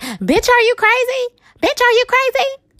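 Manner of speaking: very high, shrill scream, climbing and swooping. Retelling a scene, speaker acts out Nikki screaming from behind her security. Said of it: "she was screaming".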